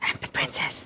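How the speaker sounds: soft, hushed whisper. Voicing a character who whispers to a companion: whispering in character. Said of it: "she's gonna whisper to Gork".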